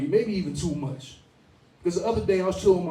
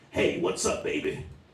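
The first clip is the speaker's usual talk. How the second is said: rough, gravelly, raspy voice. Retelling a girl's greeting, imitating a raspy smoker's voice. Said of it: "Sounding just like that".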